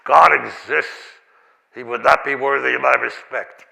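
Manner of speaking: deep, gravel-toned voice. Quoting a man's view on the existence of God, in a deep gravelly voice. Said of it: "a deep gravel voice".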